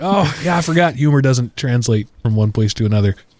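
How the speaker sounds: ordinary delivery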